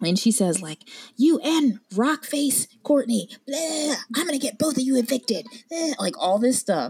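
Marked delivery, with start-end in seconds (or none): 1.2-6.0 high, demon-like ranting yell. Retelling a girl yelling threats at the speaker and Loudmouth: imitating a demonic yell. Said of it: "she sounded demonic the way she was yelling".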